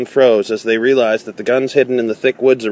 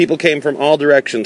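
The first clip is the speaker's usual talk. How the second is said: plain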